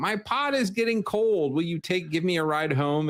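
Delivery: put-on, high-pitched old lady voice. Describing a boring game side quest to friends, imitating an old lady. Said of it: "she's an old lady who has a pot".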